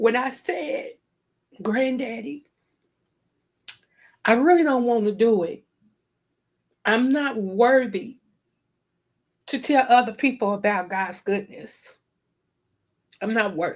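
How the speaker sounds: on the verge of crying, holding back tears. Recalling a talk with a grandfather about a calling to ministry, holding back tears. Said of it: "I'm trying not to cry".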